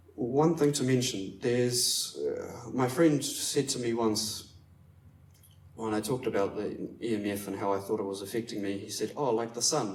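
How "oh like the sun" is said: put-on sarcastic tone. Quoting a friend's reply about EMF, retelling a sarcastic remark.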